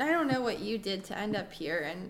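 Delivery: ordinary delivery, nothing marked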